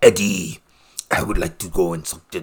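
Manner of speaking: very low, deep-chested growling monster voice. Speaker quotes the movie's Venom addressing Eddie: Venom voice. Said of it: "I like the Venom voice".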